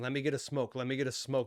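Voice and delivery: ordinary talk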